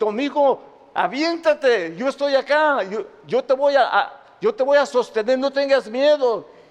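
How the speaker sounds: high-pitched, urgent calling out, shouting. Retelling a father calling up to his son in a burning building: imitating a father shouting. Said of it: "le gritó".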